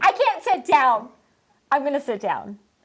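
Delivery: slow, stretched-out speech. Retelling a rose ceremony scene where a contestant is a mess: imitating Victoria P. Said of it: "What is wrong with that girl?".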